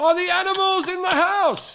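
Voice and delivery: put-on shrill, very high yell. Retelling a question one person screams to another: imitating someone screaming. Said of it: "one person screaming to another".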